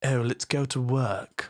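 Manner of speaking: Cambridge-style pronunciation of the word "work". Showing how different accents say the word work, speak in a Cambridge accent. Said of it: "Work is the Cambridge kind of".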